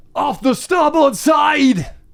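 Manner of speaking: very high-pitched, loud yell. Narrating a sea scene, a crewman spots something and calls out, yelling. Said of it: "one of the crewmen yells out".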